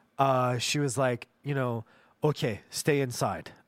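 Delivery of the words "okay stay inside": put-on Iranian-accented English in an old woman voice. Retelling the grandmother's warning during the possum story: imitating grandmother's Iranian accent. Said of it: "in her accent".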